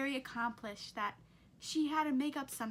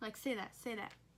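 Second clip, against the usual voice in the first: plain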